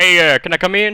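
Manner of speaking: very loud fake Southern accent. In role-play, a character knocks on the door and asks in, southern accent. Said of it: "I can only do southern accents".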